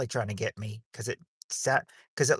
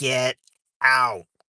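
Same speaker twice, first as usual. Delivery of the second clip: monstrous voice, louder; 8 dB louder than usual. Retelling what she heard someone say from under the building, in a monstrous voice. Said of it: "in a monstrous voice".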